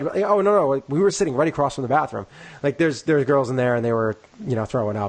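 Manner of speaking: usual speaking voice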